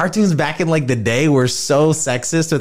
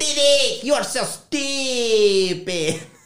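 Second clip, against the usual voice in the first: put-on cartoon kid voice, much higher; 11 semitones higher than usual. Quoting a favorite Dexter's Laboratory line, Dexter voice. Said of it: "My voice was higher".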